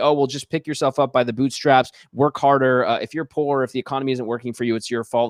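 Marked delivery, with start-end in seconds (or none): none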